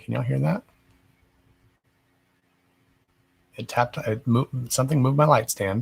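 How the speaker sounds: soft, hushed, half-whispered stage whisper aside. Speaker telling listeners about strange noises in the room, half-whispering. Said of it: "I don't know why I'm whispering".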